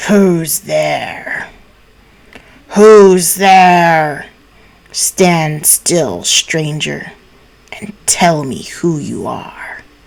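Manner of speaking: low, growling voice. A huge wolf rises and challenges a stranger stepping over it, growling voice. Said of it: "said in a growling voice".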